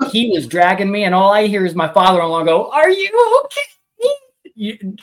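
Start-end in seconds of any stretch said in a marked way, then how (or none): 2.7-4.9 play-acted, very high, spoken while cracking up. Retelling the father-in-law asking while the speaker is dragged by a pig: imitating laughing while asking. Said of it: "Dying laughing as I'm getting dragged".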